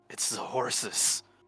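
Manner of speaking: hushed, pressing, urgent whisper. Playing a character beside a companion as something approaches: urgent whisper. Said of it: "just whispers urgently".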